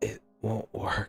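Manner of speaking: faint, barely audible muttering. Narrating a tabletop scene, a character answers the players, faint mutter. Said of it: "he kind of mutters out and just a faint".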